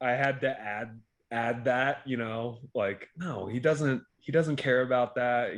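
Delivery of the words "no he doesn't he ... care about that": normal talking voice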